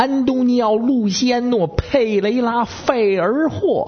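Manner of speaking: very high, slow, syllable-by-syllable Beijing accent. Reading out a long foreign name: beijing accent. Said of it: "咱哥们儿这北京口音念起来就更怪了，这味儿的。".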